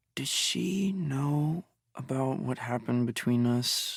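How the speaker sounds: soft, hushed half-whisper. After the narrator's mom leaves, her male guest asks her: half-whisper. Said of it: "Jay's voice drops to a whisper".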